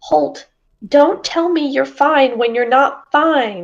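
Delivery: in-character bird voice. In a role-play, Clementine, perched on Holt's shoulder, speaks to him: Clementine's bird voice. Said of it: "in her bird voice".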